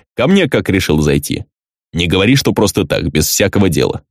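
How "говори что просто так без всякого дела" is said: ordinary delivery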